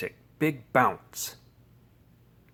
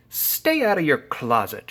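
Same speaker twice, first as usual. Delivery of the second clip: ordinary delivery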